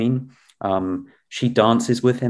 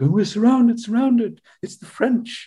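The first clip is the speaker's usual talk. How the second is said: very high, squeaky, blustering, storming agitated cry; 12 semitones higher than usual. Retelling a film scene of a lord woken at night: imitating Lord Raglan storming around. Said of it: "he's just sort of storming around the house like".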